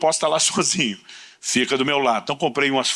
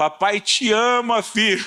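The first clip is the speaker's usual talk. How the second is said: very slow, stretched-out, high-pitched yell; 8 semitones higher than usual. Retelling calling out a car window to a son near his friends: imitating own past shout.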